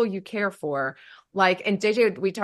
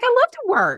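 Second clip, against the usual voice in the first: very high, loud, emphatic gushing. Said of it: "I'm like".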